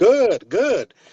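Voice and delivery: upbeat, reassuring, high-pitched and energetic voice. Imitating a Petco trainer praising a dog: high-pitched energetic voice. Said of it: "with a high energy, high pitched voice".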